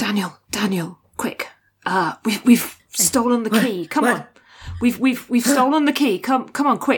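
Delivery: put-on whispering character voice. Voicing Kasny as he gets Daniel's attention, Kasny whispering. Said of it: "Just sort of like he's whispering".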